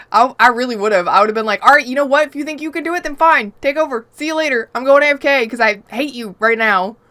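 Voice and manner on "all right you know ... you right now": put-on angry outburst, higher. Retelling what would have been said when handing over control: retelling own angry outburst. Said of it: "I was so mad".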